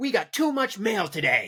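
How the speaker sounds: mock really angry. Retell a dinner scene where the father speaks to his wife, acting out a really angry father. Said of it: "Like really, really angrily".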